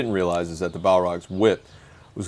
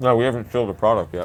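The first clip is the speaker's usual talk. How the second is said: speaking while chewing, mouth full; 3 semitones higher than usual. Mid-conversation, eating chocolate chip cookies, speaking with a mouth full of cookies. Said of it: "My mouth is full of delicious chocolate chip cookies".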